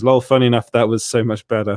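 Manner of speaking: usual speaking voice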